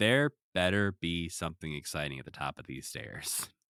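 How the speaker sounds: plain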